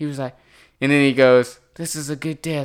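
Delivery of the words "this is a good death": soothing, lulling calm voice with a creepy edge. Imitating a film character who kills people: imitating a creepy lulling voice. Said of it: "trying to lull them into their deaths".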